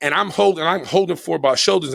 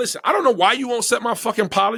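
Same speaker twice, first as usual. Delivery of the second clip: mock fed-up, pissed-off outburst, raised pitch; 7 semitones higher than usual. Retelling how the speaker answered a man who refused an apology: retelling an angry outburst. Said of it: "So now I'm starting to get pissed off".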